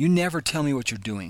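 angry, blaming, accusatory tone. Contrasting a calm statement with someone who's angry: angry accusing tone. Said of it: "Contrast that with someone who's angry".

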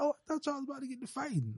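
put-on frightened, worried little girl voice. Retelling what a young daughter said when the men got loud: imitating a scared child. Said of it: "getting scared and shit".

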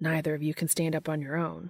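ordinary delivery, nothing marked

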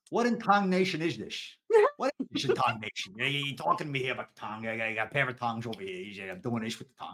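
put-on full, strong New York accent. Asked for a ridiculous accent, the speaker answers as Joey the Mets fan. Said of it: "I'm going to do it as Joey the Mets fan".

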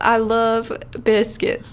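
slow, drawn-out, mock Southern country accent.

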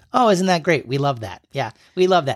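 sarcastic, ironic tone, saying the opposite of what's meant. Showing how the slang phrase is used: sarcastic. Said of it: "ironic slash sarcastic response to something bad".

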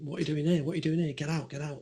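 insistent, screaming police-officer voice. Retelling police yelling at him at a deserted Piccadilly Station, retelling police screaming. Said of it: "these coppers start screaming".

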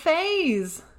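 Southern accent, "Fays" drawn out. Naming a traveling act from the aquarium, southern accent on Fays. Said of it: "I say that in like a southern accent".

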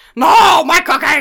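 very loud, high, furry monster voice. Mocking a wrestler on screen during a match, in a Cookie Monster voice. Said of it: "Sound like a goddamn cookie monster".

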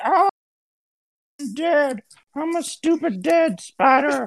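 very high, slow, drawn-out giant spider-mother voice. Taunting the spider in the game, mimicking the giant spider mom. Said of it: "He's mimicking the giant spider mom".

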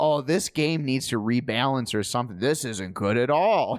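ordinary delivery

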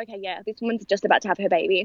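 ordinary delivery

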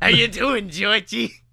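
creepy put-on clown voice. Telling a story where Pennywise pops up to greet Georgie, creepy Pennywise clown voice. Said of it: "up pops shit Pennywise".

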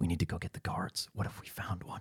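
hushed, soft whisper. Narrating a boy speaking to his friend, whispering. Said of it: "You hear him whisper to his friend".

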